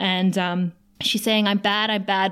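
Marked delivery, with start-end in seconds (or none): 1.5-2.3 put-on sobbing. Recapping a scene where a woman tells Angel she is bad, imitating someone sobbing. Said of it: "She's sobbing now".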